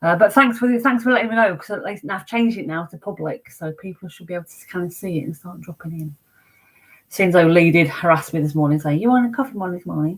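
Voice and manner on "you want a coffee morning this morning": playful, teasing, badgering, pestering tone. Retelling a morning message that Lee sent: impression of Lee. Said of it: "see my impression of you".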